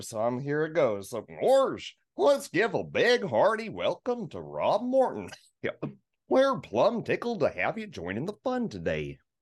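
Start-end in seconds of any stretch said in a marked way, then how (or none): 1.4-9.2 goofy, high, swooping cartoon voice. Introducing a guest in the goofiest voice the speaker knows. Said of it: "in the goofiest voice I know".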